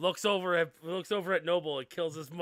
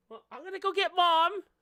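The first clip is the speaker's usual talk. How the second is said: put-on little girl character voice, higher; 14 semitones higher, 4 dB louder than usual. Voicing a little half-elf girl showing her ears: voicing a little half-elf girl. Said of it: "She goes".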